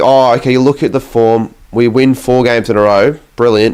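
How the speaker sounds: plain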